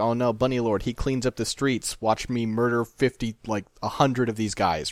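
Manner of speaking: ordinary delivery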